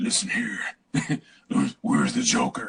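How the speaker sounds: sinister, menacing, disguised voice. Mocking how the hero's voice changes under the mask: sinister Batman voice. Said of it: "what happened to your voice?".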